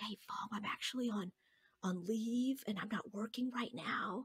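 soft, hushed, secretive whisper. Retelling what someone whispered in a corner before a presentation: imitating someone whispering. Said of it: "they're whispering to me in the corner".

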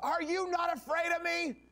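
mock, very high, intense, drawn-out, intimidating yell. Retelling a story, the speaker voices an officer confronting a calm man, retelling a yell. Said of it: "yelling in his face and just getting really intense".

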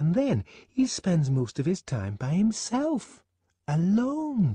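horrified voice. Fanny speaks to Lenina about the man Lenina will travel with, horrified voice. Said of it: "There was horror in Fanny's voice".

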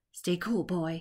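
half-whispered, under the breath. A man who has seized a boy from behind speaks to him, half-whispered. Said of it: "he whispered".

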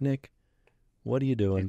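ordinary delivery

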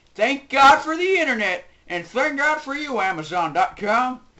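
put-on, Texan-sounding accent. Toy reviewer introducing a video, speaking in a put-on texas voice. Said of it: "that was my impersonation of a Texas voice".

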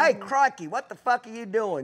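loud, oversized performance. Explaining that Australians don't talk like the TV act: Steve Irwin impression. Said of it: "the way Steve talked on those T V shows".

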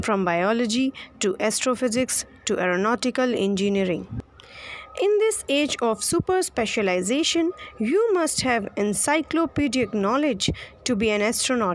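normal talking voice

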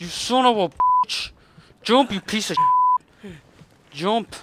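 very loud, very high, shrill, furious, frustrated raging outburst. Yelling at a game character who will not jump: frustrated yelling at game. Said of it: "I'm just frustrated right now".

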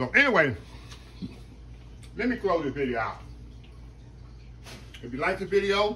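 speaking with mouth full of food. Closing out the video while eating, talking with mouth full. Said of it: "talking with my mouth full".

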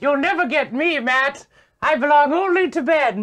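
squeaky, very high cartoon owl voice. Voicing the stuffed owl Hootie answering Matt, in a King's Quest owl voice. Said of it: "I talk like that owl from King's Quest".

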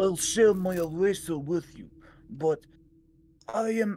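put-on Russian accent. Reading game dialogue aloud in a put-on Russian accent. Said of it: "Russian voice".

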